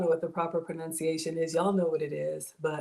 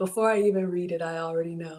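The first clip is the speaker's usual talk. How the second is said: normal talking voice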